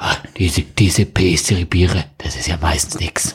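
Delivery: put-on voice, low, slow, half-whispered and breathy.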